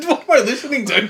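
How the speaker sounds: high, loud mock outraged voice.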